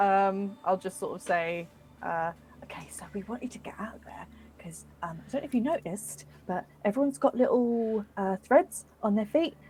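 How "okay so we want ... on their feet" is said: hushed whisper under the breath. Sending a secret spoken message to another character in the game: whispering. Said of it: "you can whisper what you need to whisper".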